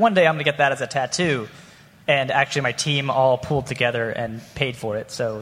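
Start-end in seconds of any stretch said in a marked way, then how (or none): none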